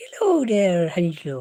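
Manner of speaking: friendly, sing-song put-on Southern Irish woman's accent. Comparing accents, speaker acts out a woman coming in: nice Southern Irish woman voice. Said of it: "a nice Southern Irish woman comes in like".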